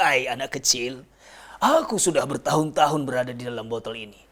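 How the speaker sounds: storyteller's put-on giant voice. A storyteller demonstrates the voice he uses for a giant on stage, giant's voice. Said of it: "ada gimmick-gimmick ketika suara raksasanya gitu".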